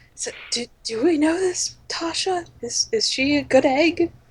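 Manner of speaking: whispered aside. Finding someone to whisper to, asking about tasha; whispering a question. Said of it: "The two of us men".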